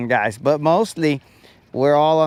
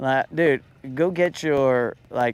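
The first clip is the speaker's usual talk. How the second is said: ordinary delivery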